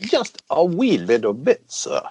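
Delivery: bad, clumsy put-on English accent drifting into Irish. Asking listeners to give on Patreon, speaking in a bad English accent. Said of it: "That was my English accent".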